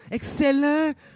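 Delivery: high, loud, hissed voice with Quebec French accent.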